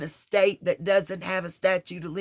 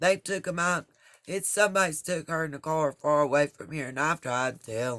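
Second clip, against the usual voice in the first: mock flat, deadpan, emotionless monotone; 3 semitones lower, 3 dB quieter than usual. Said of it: "deadpan, never any emotion, talking just like this".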